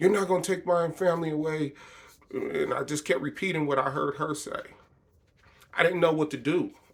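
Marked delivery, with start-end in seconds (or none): 0.0-1.7 put-on defiant screaming at the top of the lungs. Retelling walking through every room of the house, imitating screaming at the top of lungs. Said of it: "I'm screaming at the top of my lungs".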